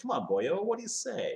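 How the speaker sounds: high, coaxing sales-pitch voice with lifted pitch. Retelling the same pitch line again: John Lithgow sort of voice. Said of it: "that Lithgow sort of like".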